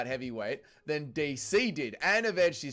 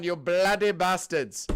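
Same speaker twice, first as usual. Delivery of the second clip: mock angry Indian accent, man's voice; 3 semitones higher, 4 dB louder than usual. Joking between sports comments, playing an angry man: put-on angry Indian accent. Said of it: "I'm an angry Indian man".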